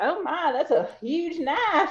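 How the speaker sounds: very heavy Southern twang, drawn out. Recalling their mother walking past a lightsaber battle on TV: thick Southern twang. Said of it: "she's got a very thick Southern twang".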